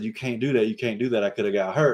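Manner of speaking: put-on angry, complaining voice. Retelling what a player said after missing a layup: imitating an angry player. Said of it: "he got all mad and said".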